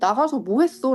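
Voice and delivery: ordinary talk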